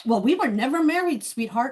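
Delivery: heavy, biting, dripping sarcasm. Retelling what he said the last time they were together, imitating his sarcastic tone. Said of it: "in the most sarcastic tone I've ever heard".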